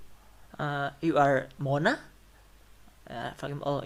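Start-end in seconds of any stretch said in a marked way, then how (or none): 1.0-2.0 Mona lifted in a rising tone. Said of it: "So we will use rising tone".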